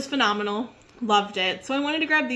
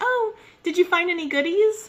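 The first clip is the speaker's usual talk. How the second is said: put-on bright, high, smiley customer-service voice; 8 semitones higher, 3 dB louder than usual. Retelling greeting someone at checkout, in a smiley customer service voice. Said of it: "customer service voice".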